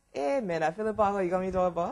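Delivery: Liberian English accent throughout. Answering a question after agreeing to reply in the same accent: Liberian accent. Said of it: "I'll answer you in a Liberian accent too".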